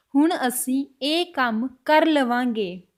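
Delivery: very slow, careful, word-by-word Punjabi speech.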